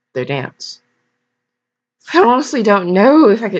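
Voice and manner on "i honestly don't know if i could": high, British-sounding accent, missed attempt at Irish. Reading a character's line, trying for irish: british accent. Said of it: "that sounds British".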